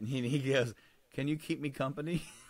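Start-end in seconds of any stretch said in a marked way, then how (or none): 1.1-2.2 put-on child whisper, quieter. Retelling how the boy answered his mom: imitating a child whispering. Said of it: "The whisperinest motherfucker".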